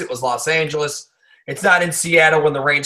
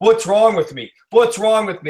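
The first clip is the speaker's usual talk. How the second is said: haughty, pretentious, arrogant tone, pitched up; 6 semitones higher, 4 dB louder than usual. A speaker mocking a player's post-game words, in a mock-arrogant Odell impression. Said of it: "in this pretentious, arrogant tone".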